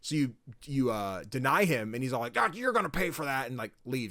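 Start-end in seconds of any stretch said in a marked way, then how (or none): 2.4-3.5 put-on pitched-up, grumbling, cranky old man voice. Retelling what a game character says when his documents don't match: imitating a grouchy old man. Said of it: "you get a grouchy old man".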